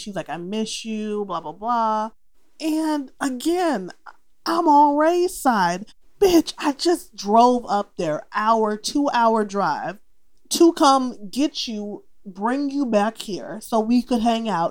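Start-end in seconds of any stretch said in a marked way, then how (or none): 0.3-2.1 put-on pouting voice, quieter. Retelling what she said while upset, mock pouty. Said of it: "She's pouty".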